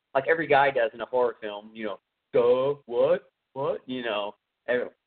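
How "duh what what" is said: dumbfounded, clueless, confused duh. Mocking how every guy in a horror film reacts, imitating a dumbfounded guy. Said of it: "so dumbfounded".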